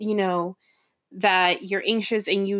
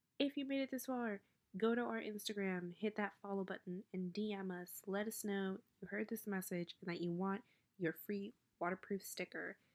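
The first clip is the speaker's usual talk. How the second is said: whisper, much quieter; 21 dB quieter than usual. Recording a message while editing at 3 in the morning, whispering. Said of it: "I'm whispering because it's like 3 in the morning".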